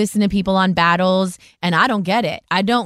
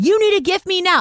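very high-pitched screaming, demanding; 12 semitones higher than usual. Retelling what those dudes say: imitating someone screaming. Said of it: "When I hear those dudes screaming".

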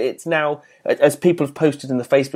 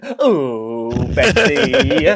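really camp, stretched "oh". Imitating how the other host sounded joining in: imitating a camp voice. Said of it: "really camp then".

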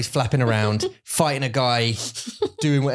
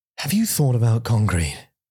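put-on British narrator voice. Imitating an audiobook voice in one's ear: Stephen Fry voice. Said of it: "Stephen Fry's in your ear going".

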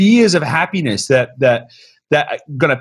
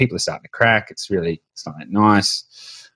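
put-on glum, downcast, dejected tone; 8 semitones lower, 5 dB quieter than usual. Retelling a phone call with a client in isolation: imitating someone sounding down. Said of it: "but he was sounding down".

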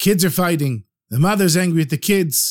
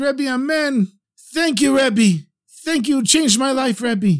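put-on tearful, weeping delivery in a high voice; 7 semitones higher than usual. Telling a story where Pinchas thanks the Rebbe through tears: imitating Pinchas crying. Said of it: "Pinchas is standing there crying".

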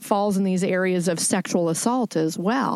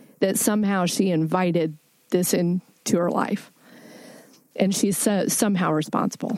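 choked-up voice, emotion catching in the throat. Speaking about a woman being blamed for what happened to her, choked up. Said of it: "it kind of chokes me up".

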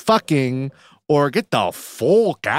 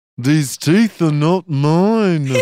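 put-on Liverpool accent; 4 dB louder than usual. Retelling how a friend imitated a Liverpool cast member: Jack impression with Liverpool accent. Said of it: "that's exactly what he sounds like".

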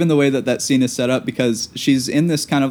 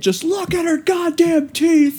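mock very high, insistent, repeated shouting. Describing a movie scene, speaker acts out a man dragged from a nightclub: retelling a yell. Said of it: "The amount of times he yells".

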